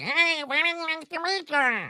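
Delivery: tiny, very high, slow little voice. Retelling meeting a small man who greets the speaker, imitating a tiny little voice. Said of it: "I hear this little voice saying".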